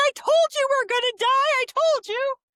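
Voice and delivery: mock terrified, panicked shriek, very high. Recalling herself as a kid on a ride at Epcot; retelling a panicked scream. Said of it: "I started screaming".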